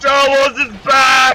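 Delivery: high, slow, full-throated ecstatic scream.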